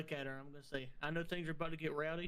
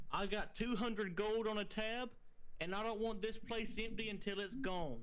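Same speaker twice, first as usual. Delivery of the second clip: raised, pitched-up call, yelled out; 6 semitones higher than usual. Player's character calling out to everyone in the tavern: yelling to the tavern crowd. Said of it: "yell out to".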